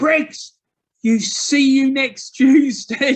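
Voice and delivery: shrill, very high scream at the top of the voice. The speaker retells a man screaming at Gary Briggs, retelling a scream. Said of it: "He just screamed out at the top of the".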